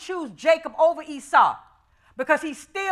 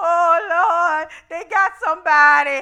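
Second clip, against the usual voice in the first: mock-crying, put-on tearful speech; 3 dB louder than usual. Retelling watching christmas movies and talking to the lord, imitating own crying. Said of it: "and I'm just a crying".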